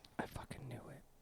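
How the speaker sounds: hushed whisper muttered under the breath. Reacting in character to news about a gang lieutenant: muttered under breath. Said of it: "I say it under my breath".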